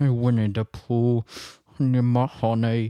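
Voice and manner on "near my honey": loud, belted, clumsy, failed cartoon bear voice. Mid-rant about people commenting on her socks, slip into a Winnie the Pooh voice. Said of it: "That doesn't sound anything like Winnie the Pooh".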